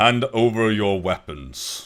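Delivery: put-on very loud, thick, heavy Northern Common accent. A game narrator voices a guard approaching in the hall, heavily accented Northern Common. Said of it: "in kind of heavily accented Northern common".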